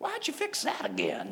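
put-on childish griping voice. Retelling what kids say about their plate: imitating a complaining kid. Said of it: "kids are wont to complain".

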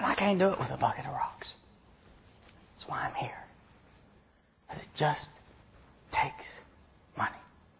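hushed, soft, breathy whisper.

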